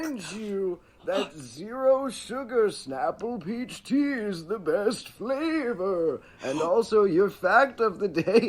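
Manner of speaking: very high, spooky voice. Playing Snapple Claus delivering a Snapple pitch: spooky Santa voice. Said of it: "spooky Santa".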